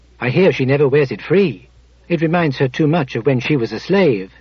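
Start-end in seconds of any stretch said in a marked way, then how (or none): none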